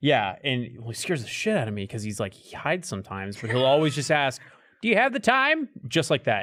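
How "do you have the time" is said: very high, robotic, machine-like playback voice. Describing a guy at their apartment asking the time, imitating a robotic voice. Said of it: "like a fucking voice recording or a robot".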